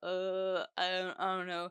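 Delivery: imitated talking with full mouth. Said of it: "mouthful of carbonara".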